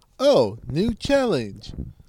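silly computer-generated text-to-speech narrator voice. Joking about a TikTok challenge, TikTok text-to-speech voice. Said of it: "that little stupid TikTok voice that's like".

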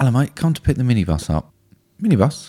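offhand, casual conversational tone. Telling a friend about picking up a minibus for a Christmas outing, doing an impression of the minibus pickup. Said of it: "can I do an impression?".

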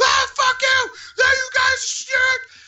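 very high put-on screaming. Recounting holding a man down as security arrives, retelling a man screaming. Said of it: "He's just screaming".

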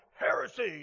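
grim, harsh, disapproving and condemning delivery. Describing how people say the word heresy: heresy said with a scowl. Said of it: "we have to say it with a scowl".

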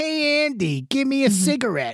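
high, loud, drawn-out killer doll voice. Offering to say a famous movie line: Chucky voice. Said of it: "You wanna hear me say the famous line?".

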